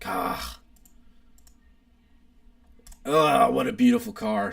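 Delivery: overcome with feeling, moved and admiring. Speaker admiring a car in front of viewers, getting emotional. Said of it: "I'm getting emotional here".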